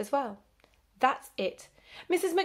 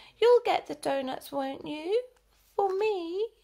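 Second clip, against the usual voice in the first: little, babyish, high-pitched put-on baby voice; 8 semitones higher than usual. Narrator reading a character's line in a story, in a baby voice. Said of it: "Jane put on a baby voice".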